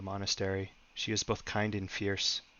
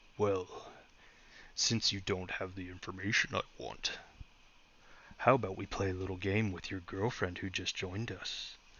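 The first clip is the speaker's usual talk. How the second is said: deep, rumbling, gleeful demon voice; 4 dB quieter than usual. Narrating a story, the creature speaks over Eric, in a deep rumbling gleeful voice. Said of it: "The creature said gleefully in a deep rumbling voice".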